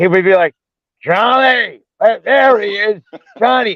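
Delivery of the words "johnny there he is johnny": slow, stretched-out, drawn-out calling voice. Retelling how an actor from the movie set greeted him: imitating Brad Sullivan's loud call. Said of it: "you'd hear him a mile away".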